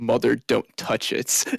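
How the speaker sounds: hushed, deep, soft whisper. Casting an illusion that speaks into a player's ear: deepest, softest whisper. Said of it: "the deepest and softest of whispers in your ear".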